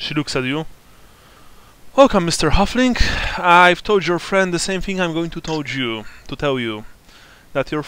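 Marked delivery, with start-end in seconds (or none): 2.0-7.8 put-on raised, youthful young woman's voice. Narrating a scene, voicing the sister as she greets the visitor: young woman's voice. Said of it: "a young, quite attractive woman".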